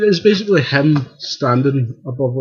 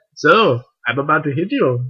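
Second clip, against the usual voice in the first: put-on German accent in a villain voice; 2 semitones higher than usual. Joking about Ultron about to smack someone, voicing Ultron with a German accent. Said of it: "in a German accent".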